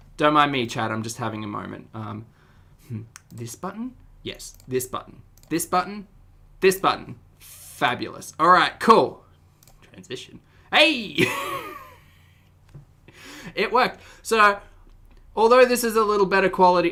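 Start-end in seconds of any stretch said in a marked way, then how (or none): 10.7-16.9 loud, high, swooping yell. Checking that a stream transition worked: yelling. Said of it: "why am I yelling?".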